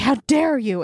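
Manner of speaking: mock super-angry, acted-out outrage. Retelling a man's reaction on learning who he married, mock super-angry. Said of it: "he's like super angry".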